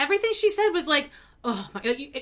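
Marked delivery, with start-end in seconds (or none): 1.4-2.2 mock muttering under breath, quieter. Retelling what a woman said to the camera: imitating someone muttering under breath. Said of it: "under her breath".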